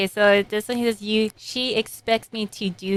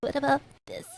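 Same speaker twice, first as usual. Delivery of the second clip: put-on pathetic, breathy, half-whispered little voice; 5 semitones higher, 7 dB quieter than usual. Describing how a manga character sounds in a dub, mock-pathetic delivery. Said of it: "he sounds pathetic. He's like".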